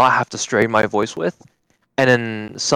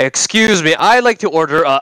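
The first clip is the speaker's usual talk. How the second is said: high, loud, fake audio cutting out mid-line; 6 semitones higher, 5 dB louder than usual. Showing others their own cutting-out voice, speaker uses a fake cutting-out voice. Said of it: "My own cutting out voice".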